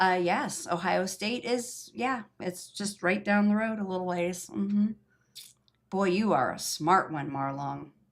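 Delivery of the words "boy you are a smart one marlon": dry, sarcastic praise, not meant. Answering a viewer's comment about Ohio State: sarcastic. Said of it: "Just had to give you some, uh, sarcasm there".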